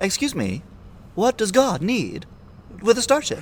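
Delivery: very high, nonchalant, sassy voice with swooping pitch. Correct someone on how to say the starship line, with a sassy Shatner impression. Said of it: "more sass ... it's Shatner at peak Karen".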